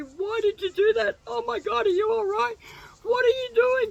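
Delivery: put-on bawling, frantic, very high, loud sobbing. Retelling what a crying man said to them after the fall: imitating someone crying hysterically. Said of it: "is crying his eyes out".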